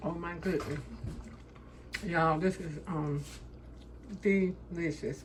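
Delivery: talking with a mouthful while chewing. Tasting the food while talking to the audience, talking with food in mouth. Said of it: "talking with food in my mouth".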